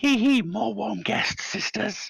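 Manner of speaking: very high, rasping, tittering creature voice. A narrator voices unseen creatures greeting guests in the darkness: tittering, high-pitched, rasping voices. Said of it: "tittering, high-pitched, rasping voices came out".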